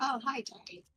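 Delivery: very soft, barely-there hushed voice. Playing a character greeting a god's statue in a temple: very quietly. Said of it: "Very, very quietly".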